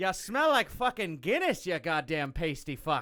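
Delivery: put-on Canadian guy accent, kind of Irish. Joining a bit about a xenophobic Canadian guy: Canadian guy voice, kind of Irish. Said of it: "yours is kind of Irish, too".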